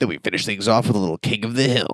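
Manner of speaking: TV syndication promo announcer voice. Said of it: "T V syndication voice".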